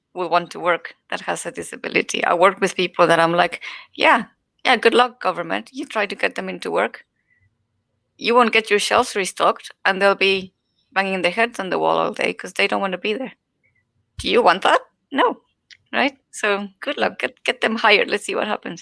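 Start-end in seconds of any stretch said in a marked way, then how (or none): 4.0-18.8 scornful, dry, sarcastic tone. Retelling own reaction to the government getting people into work: sarcastic. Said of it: "I'm saying that sarcastically".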